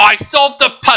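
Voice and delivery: high British accent. Acting out a game scene after a puzzle is solved, in Luke's British accent. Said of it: "That's my Luke British accent".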